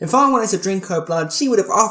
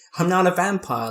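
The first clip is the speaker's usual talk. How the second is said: usual speaking voice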